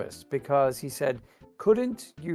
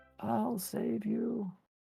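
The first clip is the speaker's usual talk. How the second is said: high-pitched put-on voice, much quieter; 8 semitones higher, 11 dB quieter than usual. Playing a game with a teammate, in a high-pitched voice. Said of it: "when you do like the high pitched voice there".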